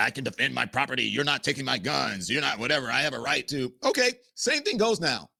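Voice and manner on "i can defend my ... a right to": sarcastic mocking voice, lower pitch. Mocking Americans who claim the right to defend their property: mocking imitation of gun owners. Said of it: "he just said that in a mocking way".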